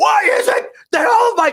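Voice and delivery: very high, drawn-out, held-back screaming-style yell. Imitating a guy who screams in his car videos: imitating someone screaming. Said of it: "every single video is him sitting in his car screaming".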